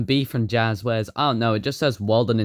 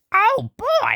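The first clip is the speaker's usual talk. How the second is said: put-on strained, squeaky voice, pitched higher. Showing a plush toy, doing the joke voice: Toad voice. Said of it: "doing this joke about Toad's voice".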